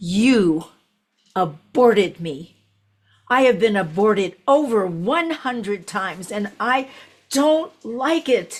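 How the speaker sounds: little, small voice full of anger. Recounting what the entity said to the speaker, retelling a little angry voice. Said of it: "this little angry voice said to me".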